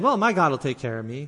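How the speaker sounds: ordinary delivery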